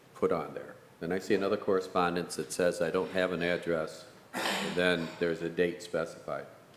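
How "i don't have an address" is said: ordinary talk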